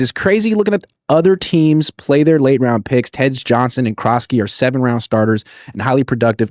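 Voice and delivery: ordinary talk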